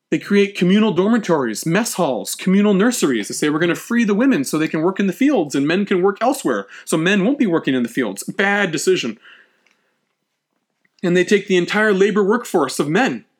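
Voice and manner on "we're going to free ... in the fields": ordinary delivery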